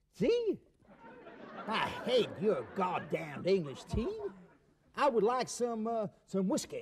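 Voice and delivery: put-on American accent. An American character talks with his English hostess, in an American accent. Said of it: "especially to his American accent".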